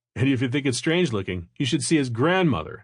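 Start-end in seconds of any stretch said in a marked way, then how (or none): none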